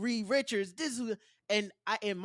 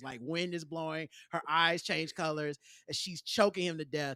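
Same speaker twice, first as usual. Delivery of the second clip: ordinary talk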